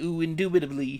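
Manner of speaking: soft nerdy put-on voice. Asked if he can do a comic book guy's voice, trying it: Comic Book Guy voice. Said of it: "Can you do a comic book guy's voice?".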